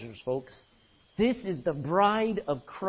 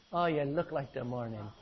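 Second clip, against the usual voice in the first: Irish way of talking; 5 semitones lower, 5 dB quieter than usual. Reading verse 10, then saying the line like an irish guy, in an irish accent. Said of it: "Doesn't that sound like an Irish guy talking?".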